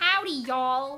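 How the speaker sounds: clumsy, bad put-on Southern American accent. Trying the accent without hearing her do it first, bad put-on Southern accent. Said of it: "that bad southern accent".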